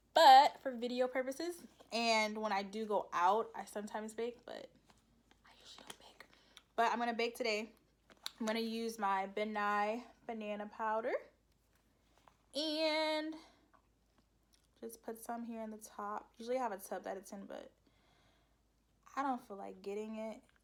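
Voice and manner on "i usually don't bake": quiet, breathy whisper.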